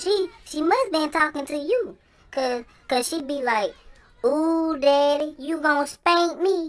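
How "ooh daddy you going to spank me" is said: put-on soft-spoken voice, much quieter. Retelling what the speaker's mama says, imitating her real soft voice. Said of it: "She be talking in a real soft voice".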